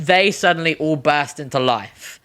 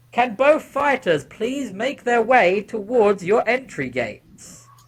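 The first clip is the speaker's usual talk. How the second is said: booming, mic-amplified robot announcer voice; 7 semitones higher than usual. Narrator voices a robot addressing the whole crowd, booming mic-amplified robot voice. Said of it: "booming out with a mic amplified voice".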